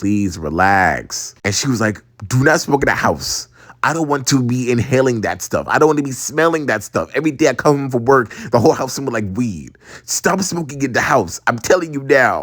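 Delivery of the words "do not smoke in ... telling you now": normal talking voice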